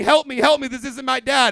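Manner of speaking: put-on high, loud, screaming child's voice. Picturing a kid in the park shouting for help: mock kid screaming for help. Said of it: "that kid was screaming".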